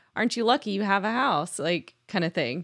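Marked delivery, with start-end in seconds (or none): 0.2-1.6 mock sarcastic tone. Retelling a comment someone made about a flooded house: imitating a sarcastic remark. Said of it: "that was said in sarcasm".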